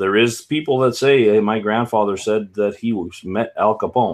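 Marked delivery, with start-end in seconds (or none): none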